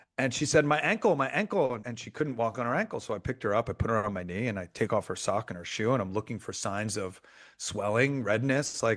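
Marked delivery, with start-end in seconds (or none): 0.7-1.8 put-on child's high, drawn-out cry of hurt. Retelling what she said about her ankle, imitating her pained cry. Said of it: "this was a cry for pain".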